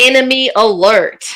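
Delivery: yelling at top of lungs. During a game, in character: yelling at the top of lungs. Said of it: "I'm going to yell at the top of my lungs".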